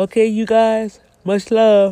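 speaking through a yawn. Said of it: "I don't know why I'm yawning".

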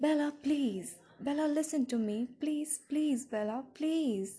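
pleading, begging voice, over and over. The angel's voice begs the narrator to listen to him, begging. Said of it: "he begged".

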